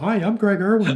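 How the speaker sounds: bright, eager tone. Retelling greeting an actor at the craft service table: retelling own chipper greeting. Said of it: "all chipper and saluting".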